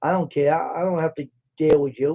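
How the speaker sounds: ordinary delivery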